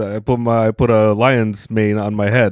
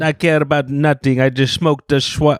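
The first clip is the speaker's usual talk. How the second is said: put-on Jamaican accent; 5 semitones higher than usual. Friends improvising a Rasta character, in a Jamaican accent. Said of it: "Why are you so good at this accent?".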